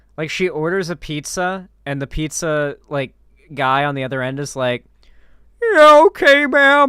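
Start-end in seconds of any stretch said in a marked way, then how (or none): 5.6-6.9 put-on very high, loud, cracking teenager voice. Retelling the pizza guy on the other end of an order, voice-cracking teenager voice. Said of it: "my best like voice cracked teenager voice".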